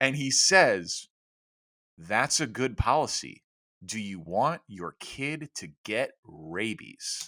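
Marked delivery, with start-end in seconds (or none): 2.0-7.3 low, slow, dead-serious, earnest deadpan. Retelling a random dad's reply at a school event: imitating a dead-serious deadpan reply. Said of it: "looks me dead in the eye without a hint of sarcasm".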